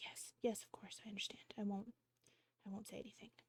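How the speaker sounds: hushed, barely audible whispered delivery. Retelling an overheard exchange, the reply comes back in a quiet voice. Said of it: "you kind of hear a quiet voice".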